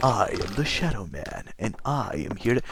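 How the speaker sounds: softly spoken game-character voice. Showing listeners what the game's main character sounds like; Shadow Man voice impression. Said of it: "He literally sounds like".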